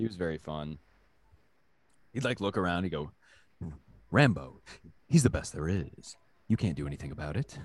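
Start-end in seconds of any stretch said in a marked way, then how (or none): 4.1-7.6 low, fancy, grand theatrical Shakespearean stage-actor delivery. Quoting the sergeant, who talked like a fancy man, in a Shakespearean actor voice. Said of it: "he talked like a kind of like a fancy man slash like Shakespearean actor".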